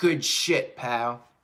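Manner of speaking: voice dropped low for the delivery. Quoting how Vince would say it: Vince McMahon impression. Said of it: "or as Vince would say".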